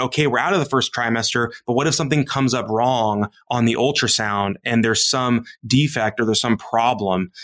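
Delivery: normal talking voice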